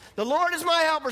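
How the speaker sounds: high, loud declaration full of confidence.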